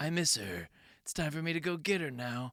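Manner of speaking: put-on flat emotionless voice. Mocking an actor's lack of emotion: flat unemotional Tom Cruise impression. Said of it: "he's not doing any emotional acting".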